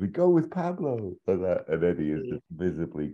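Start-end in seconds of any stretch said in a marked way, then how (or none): 0.0-1.1 very high, delighted, thrilled squeak. Retelling a story, the speaker voices Benito's reply, imitating Benito's delighted squeak. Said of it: "squeaks with delight".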